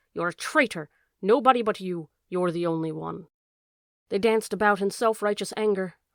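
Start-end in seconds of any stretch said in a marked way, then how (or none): 0.2-3.3 sly, hissed fox voice. Narrator reading the fox's line to the dog in a story, hissing fox. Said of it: "hissed the fox".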